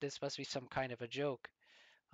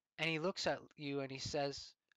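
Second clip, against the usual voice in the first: ordinary delivery, nothing marked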